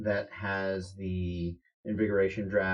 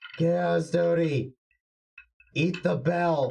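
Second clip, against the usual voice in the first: faint, very high, very slow, drawn-out distant yell; 9 semitones higher, 4 dB louder than usual. Voicing someone yelling from within his cabin quarters: faint yelling from a cabin. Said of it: "voice of eighties yelling from within his cabin quarters".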